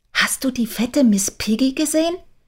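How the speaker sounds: high little whisper under the breath. Narrating a story, Kira speaks to her mother: whispered. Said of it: "Kira flüsterte zu ihrer Mutter".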